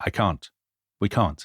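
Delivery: hushed, low, subdued, quiet voice. Retelling Moltke's reply about the war plan: quiet voice. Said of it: "in this sort of quiet voice".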